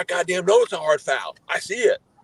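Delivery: play-acted, shrill, very high-pitched furious screaming. Retelling how the ref answered a remark about a hard foul: imitating the ref screaming. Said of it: "He was screaming at me".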